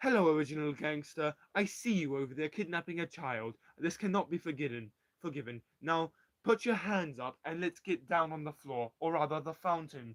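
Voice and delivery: put-on spoken with British accent. Narrating a story, voicing a character confronting a kidnapper, Mike's British accent. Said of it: "notice the British accent because he's British".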